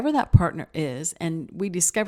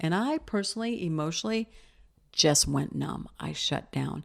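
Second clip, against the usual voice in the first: ordinary delivery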